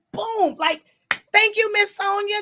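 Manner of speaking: loud, shrill yelling pitched very high. Thanking Miss Sonia, yelling. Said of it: "I'm sorry I'm yelling in y'all ear".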